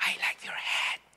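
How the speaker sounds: very soft, hushed, breathy whisper. Speaker retells an older american woman commenting on her cap: retelling a very soft whisper. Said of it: "me dijo bien despacito".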